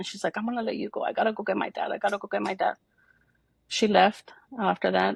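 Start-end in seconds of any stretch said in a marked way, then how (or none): 0.4-2.7 tearful, shaken words spoken through crying. Retelling a crying listener's reply to the news: imitating someone crying. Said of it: "She was crying".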